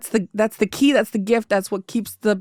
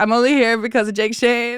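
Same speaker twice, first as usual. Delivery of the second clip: usual speaking voice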